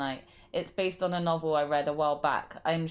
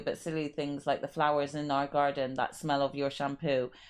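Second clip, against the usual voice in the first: usual speaking voice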